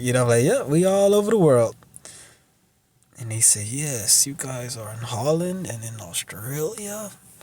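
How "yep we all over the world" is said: mock wry, knowing, pitched-up voice. Retelling his own reply to a man naming countries, with a put-on smirk. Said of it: "With a smirk".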